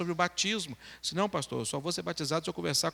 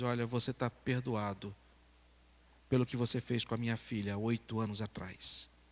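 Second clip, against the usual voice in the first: mock speaking through tears, crying; 6 semitones lower, 4 dB quieter than usual. Retelling a man's words of forgiveness to a neighbour: imitating someone crying. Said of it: "E em choro, ele chega pra aquele rapaz e diz".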